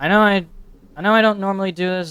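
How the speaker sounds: loud, fast, angry, spat-out rant.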